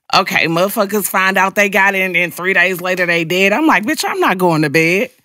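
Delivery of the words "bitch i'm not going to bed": normal talking voice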